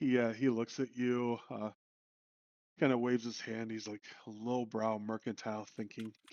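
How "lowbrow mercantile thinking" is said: muttering under breath, lower and quieter. Voicing a character who waves off a player's reply: muttering under his breath. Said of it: "kinda whispers under his breath".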